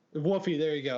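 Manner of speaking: ordinary talk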